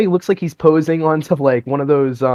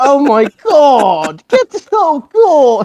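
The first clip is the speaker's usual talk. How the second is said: put-on angry chef voice, higher and louder; 10 semitones higher, 5 dB louder than usual. Imitating Gordon Ramsay looking at a dish, getting angry. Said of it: "he'll look at the dish and he'll go".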